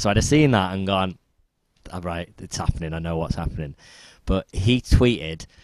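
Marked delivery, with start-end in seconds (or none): none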